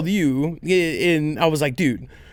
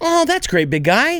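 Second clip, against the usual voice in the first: pitched-up, mock tone, as if to a toddler; 8 semitones higher than usual. Recounting one's own reply, acting out talking to a small child. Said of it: "my tone went to like I was talking to my four year old".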